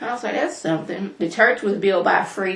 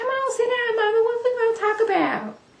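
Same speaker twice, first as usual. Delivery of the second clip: put-on very high, childlike, girlish little-girl voice. Retelling what a little girl said, imitating Heavenly's voice. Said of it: "I'm doing Heavenly's voice".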